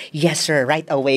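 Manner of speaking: normal talking voice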